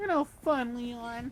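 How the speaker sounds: very high, put-on girlish whine. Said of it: "we keep using that as her voice".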